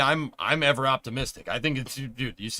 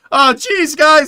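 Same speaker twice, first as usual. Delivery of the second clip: put-on jittery voice, very high, very loud; 14 semitones higher, 14 dB louder than usual. Trying an impression of Jack that comes out as a Morty voice. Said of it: "my impression of Jack just ended up being Morty".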